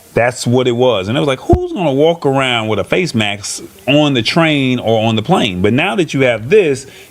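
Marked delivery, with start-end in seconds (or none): none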